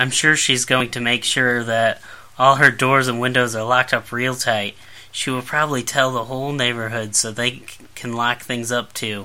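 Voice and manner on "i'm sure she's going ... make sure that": usual speaking voice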